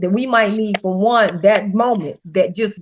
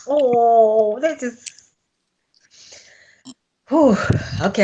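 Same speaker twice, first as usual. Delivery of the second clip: slow, choked-up, drawn-out oh, close to crying. Reacting to another speaker's story about finding her own voice, holding back tears. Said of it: "I don't wanna get teary".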